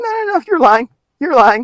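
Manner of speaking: high, dismissive, mocking voice.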